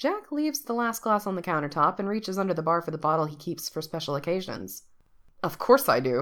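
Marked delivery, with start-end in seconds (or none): 5.4-6.2 low, dismissive, brushing-off scoff. Jack answers a question about his plans for the big day, scoffing. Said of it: "he scoffs as he pours".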